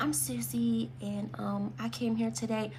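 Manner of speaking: very soft, halting, unsure, barely audible voice. Showing someone who speaks without confidence introducing herself, quiet, hesitant voice. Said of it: "Can nobody hear you?".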